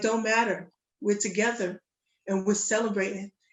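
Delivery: ordinary delivery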